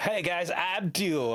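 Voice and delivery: put-on slow, high, drawn-out, breezy American accent. Retelling how a character introduces himself: Duo voice, American accent. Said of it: "he has a very American accent".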